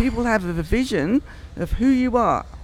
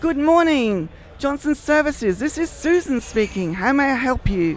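energetic voice, full of energy, pitched up; 5 semitones higher than usual. Speaker demonstrates how someone should answer the company phone, energetic phone greeting. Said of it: "someone with energy who says".

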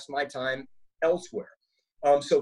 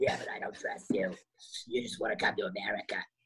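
half-whispered, breathy heavy-smoker voice; 7 semitones lower, 8 dB quieter than usual. Imitating the wife on the show: imitating a heavy smoker's voice. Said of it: "she's like a full smoker".

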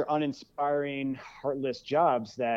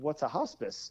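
mock-dumbfounded, much quieter; 8 dB quieter than usual. Retelling confusing a hospice with a hostel in a conversation, acting out being dumbfounded.

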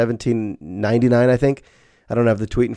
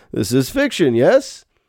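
put-on founding-father voice, played as old statesman; 3 semitones higher than usual. Imagining a historical figure shown a dinosaur picture: George Washington voice. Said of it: "It's my George Washington".

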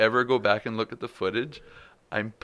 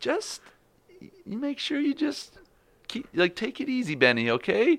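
very high, swooping, worried and concerned caring voice. Retelling a phone call with his wife, imitating Jenna's concerned voice. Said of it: "I can hear in her voice".

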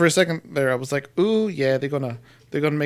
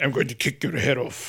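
put-on brooding wrestler voice, quieter; 2 semitones lower, 6 dB quieter than usual. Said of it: "quiet Drew".

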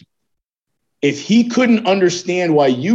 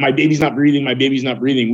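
ordinary talk, nothing marked

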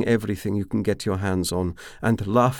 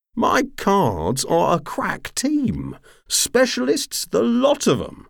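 mock outrage, very high pitch, swooping; 12 semitones higher, 4 dB louder than usual. A man replies to a woman's refusal, in mock outrage. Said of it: "declared in mock outrage".

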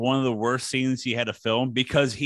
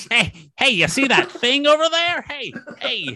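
weird voice, very high and loud; 12 semitones higher, 5 dB louder than usual. Performing a line after being asked for a weird Jay Leno voice. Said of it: "in a weird Jay Leno voice".

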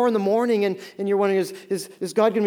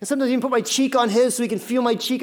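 ordinary delivery

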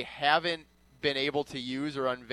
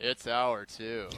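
mock dejected, reluctant, low, gloomy announcer voice; 4 semitones lower than usual. Imitating the show's voice guy saying the hour-two bumper, mock-depressed delivery. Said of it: "his depression when he says hour two".

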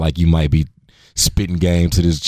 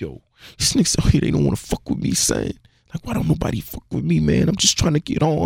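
crying, tearful, very high voice; 10 semitones higher, 4 dB quieter than usual. Retelling a man overheard in a bathroom stall: imitating someone crying on the phone. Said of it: "But he's, like, crying, crying".

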